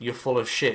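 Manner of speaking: ordinary talk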